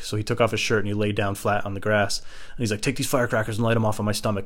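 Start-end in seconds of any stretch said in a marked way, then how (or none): none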